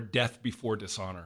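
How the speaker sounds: ordinary talk, nothing marked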